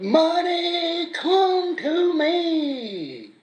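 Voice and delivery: very high, shrill preacher-style stage scream, "me" stretched out. Telling another person to look at a preacher standing on the stage, imitating Osteen screaming. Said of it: "standing on the stage screaming".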